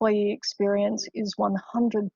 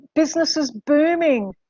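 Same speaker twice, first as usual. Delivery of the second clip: thick, obvious sarcasm with raised pitch; 6 semitones higher, 4 dB louder than usual. Answering an audience question about covid's impact on the business: sarcastic. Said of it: "that was sarcasm, complete sarcasm".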